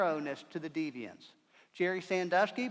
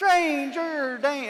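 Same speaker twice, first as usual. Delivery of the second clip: very slow, drawn-out, high, loud yell; 9 semitones higher, 10 dB louder than usual. Retelling how little kids on the playground point and yell, saying it really slow. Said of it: "they say it really slow".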